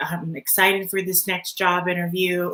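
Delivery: ordinary delivery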